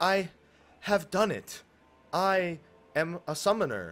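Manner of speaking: stilted, flat line reading. Recalling the first scene where you meet Yuna, quoting her: stilted Yuna impression. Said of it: "extremely stilted".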